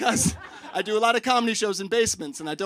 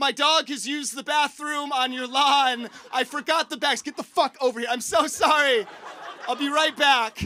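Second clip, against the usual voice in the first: high, half-yelled, mildly screamed rant; 6 semitones higher than usual. Recounting screaming at someone's house to leave a voicemail, retelling a scream. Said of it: "started screaming at the house like a psychopath".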